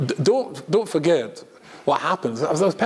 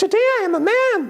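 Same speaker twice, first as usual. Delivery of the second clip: slow, tiny, very high falsetto; 4 dB louder than usual. Retelling how he begins his joke-filled speech after total silence: tiny falsetto voice. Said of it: "it's tiny little falsetto voice".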